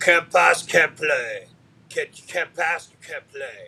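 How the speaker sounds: loud, high put-on Finnish accent. Recalling a former player's constant saying: imitating a finnish accent. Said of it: "pardon my Finnish accent here".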